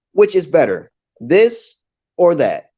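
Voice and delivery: slow, wide stress on this and then on that.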